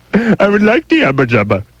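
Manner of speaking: bad put-on Indian accent, very high and swooping. Doing a short bit for the co-hosts, in a bad put-on Indian accent. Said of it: "my Eastern Indian accent".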